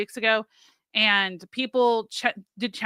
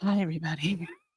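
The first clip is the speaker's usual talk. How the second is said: soft, hushed voice kept down; 5 semitones lower, 8 dB quieter than usual. Retelling greeting the audience while a child sleeps nearby, quiet voice. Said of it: "I would be having to be quiet".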